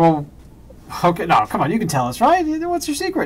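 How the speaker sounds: high, coaxing morning show host voice.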